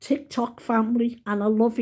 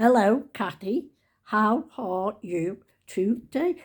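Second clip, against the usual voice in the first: put-on posh lady voice. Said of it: "in me, Missus Bouquet voice".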